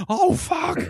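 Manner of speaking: shrill, very high, loud, startled alarmed outburst. Retelling how everyone reacted to the accident: imitating onlookers' alarmed swearing. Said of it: "like this".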